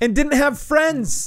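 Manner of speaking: put-on accusatory ranting.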